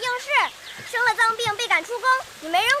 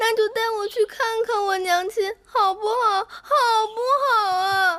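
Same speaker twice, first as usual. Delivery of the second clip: slow, tearful pleading voice. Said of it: "乖月儿，不哭了啊".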